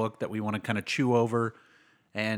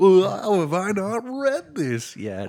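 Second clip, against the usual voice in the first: very high, swooping, drawn-out sing-song voice; 9 semitones higher, 4 dB louder than usual. Impersonating the other speaker's reaction to the book: imitating the co-host. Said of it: "This is my impersonation of you".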